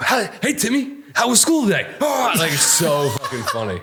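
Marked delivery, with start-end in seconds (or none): 0.0-1.9 very high, crazed, unhinged voice. Retelling a movie scene where a crazy husband greets his son: imitating a crazy husband greeting his son. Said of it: "he's like".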